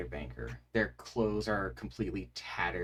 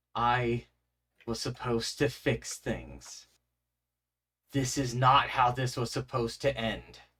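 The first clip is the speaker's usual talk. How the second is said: trembling voice that ripples and echoes; 3 semitones higher, 4 dB louder than usual. The narrator voices a figure who ignores the players: shaky, echoing, rippling voice. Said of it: "through their their sort of shaky voice that seems to echo and ripple".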